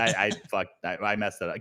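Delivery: ordinary delivery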